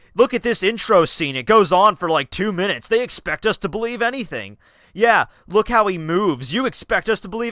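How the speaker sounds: indignant, fed-up, high-pitched angry nitpicking rant. Retelling how he complained about a game's intro: imitating his past angry ranting. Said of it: "I was getting mad over this".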